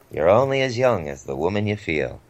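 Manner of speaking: rough put-on comedian voice. Quoting a line about dating and age, in a Groucho Marx voice. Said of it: "that was not the best Groucho Marx impression".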